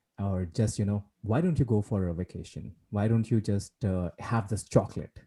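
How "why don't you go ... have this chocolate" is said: ordinary talk, nothing marked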